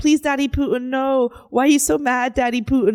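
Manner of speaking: high, begging, pleading tone. Retelling online comments begging Putin not to have a war: imitating commenters begging. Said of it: "begging Putin to not have a war".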